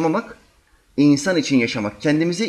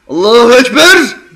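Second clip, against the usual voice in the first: booming, very loud, attention-grabbing call; 8 semitones higher, 12 dB louder than usual. Retelling a man starting prayer beside his boss: loud attention-drawing Allahu Ekber. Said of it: "Bir de sesli bir tekbir aldı ki dikkat çekeyim".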